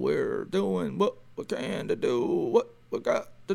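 slow monotone put-on voice. Mocking how a president sounds when speaking: slow monotone Joe Biden impression. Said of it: "slow, it's, you know, monotone".

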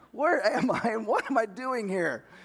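put-on stunned, horrified tone. Retelling the father waking confused in a teenage girl's room: imitating dad sounding horrified. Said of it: "He was, like, horrified".

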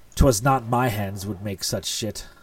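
hissing under breath. Voicing a guide answering a player's praise of the wall: hissing under her breath. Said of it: "She sort of hisses under her breath".

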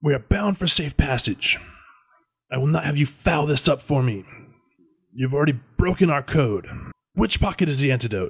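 hissed words in stage half-whisper style. A narrator voices Voltenna speaking to her in the jungle night, hissed half-whisper. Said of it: "she kind of like hiss whispers at her".

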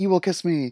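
frantic, panicked, high, loud, freaked-out outburst. Retelling a comic where a character worries about a kiss: retelling a freak-out. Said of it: "freaking out about it".

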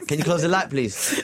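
Nigerian English accent, auntie style. Demonstrating a phrase some people say, in a Nigerian auntie accent. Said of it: "You sound like a Nigerian auntie still".

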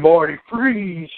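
mock light, mild token scream. Retelling a movie scene where Doc warns Marty: imitating Doc screaming. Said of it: "Doc is just screaming".

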